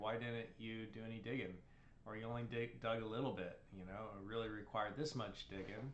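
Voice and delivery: ordinary delivery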